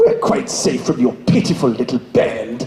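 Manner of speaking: very low, sinister villain voice. Showing off an impression to the others, doing an Emperor Palpatine impression. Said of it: "Would you like to hear my Emperor Palpatine impression?".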